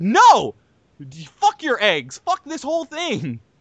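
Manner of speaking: put-on angry outburst. Retelling what you snapped back while Sean stayed calm: retelling an angry outburst. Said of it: "I'm fucking angry".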